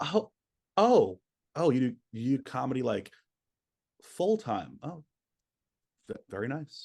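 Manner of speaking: mock lukewarm, slow, passive, unimpressed politeness. Imitating older relatives reacting to doing comedy full time: imitating a passive, disappointed "very nice". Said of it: "in, like, a fairly passive way".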